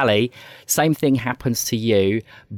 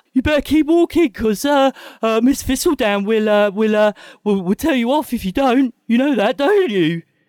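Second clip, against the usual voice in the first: cracking adolescent voice, much higher, louder; 13 semitones higher, 4 dB louder than usual. A game master voices a teenage character warning two players, voice cracking with puberty. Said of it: "his voice is beginning to break".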